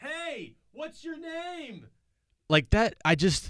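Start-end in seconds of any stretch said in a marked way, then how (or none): 0.0-1.9 very quiet, high, stretched-out, soft shout. Acting out hitting on someone in a loud bar: imitating someone screaming. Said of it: "Screaming in their face".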